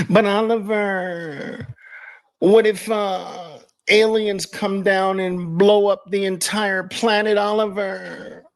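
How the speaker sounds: high, slow, whiny mock crying wail. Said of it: "I always hear them in my mind like that".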